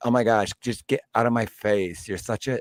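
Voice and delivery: put-on phony, laid-on girly schoolgirl voice. Speaker mocks the fake girls from school who all talked alike, imitating their talk. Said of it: "really fake bitches that all talk like this".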